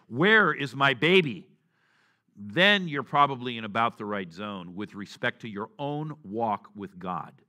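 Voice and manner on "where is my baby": loud, frantic, drawn-out cry. Giving an example of a father rushing through supermarket aisles; imitating a frantic father. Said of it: "the frantic voice of a father".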